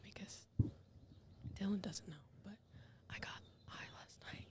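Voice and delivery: hushed, secretive whisper under the breath. Confessing a secret to friends that dylan doesn't know: whispering. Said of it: "I have to whisper it".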